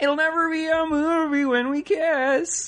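very high, silly, goofy cartoon puppet bear voice. Trading silly voices with someone else, speak in a half Fozzie Bear voice. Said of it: "that was the best voice yet".

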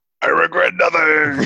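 very high-pitched yelled-out cry. Game master voicing a character fighting a dragon, yelling out. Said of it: "You hear him just yell out".

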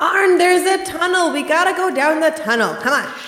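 loud yelling. Calling down a well to another character about a tunnel: yelling in character. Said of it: "Can you guys stop yelling".

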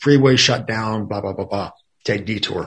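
usual speaking voice

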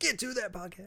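high, shouted voice. Voicing a yelling figure in a picture, ordering the speaker: pretend yelling at me. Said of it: "He looks like he's yelling at me".

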